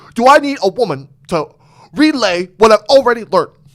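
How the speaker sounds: very loud, high-pitched, dismissive and scornful bellow. Retelling how they were imitating Andrew Tate: Andrew Tate voice. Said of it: "we were imitating Andrew Tate".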